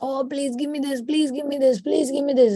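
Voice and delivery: put-on high, childish pleading, repeated over and over. Imitating a prayer said like a kicking, screaming child: imitating a demanding child. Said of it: "like a child, you know, kicking and screaming".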